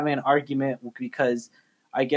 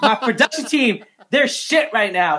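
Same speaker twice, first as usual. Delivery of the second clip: put-on annoyed, upset outburst, pitched up; 8 semitones higher, 4 dB louder than usual. Retelling how someone came out on a delayed live stream: imitating someone upset. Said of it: "she was upset".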